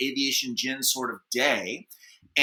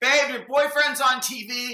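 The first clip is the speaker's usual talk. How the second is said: very high, carrying yell; 11 semitones higher than usual. Telling a story, retelling a yell from another room. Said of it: "yells from the living room".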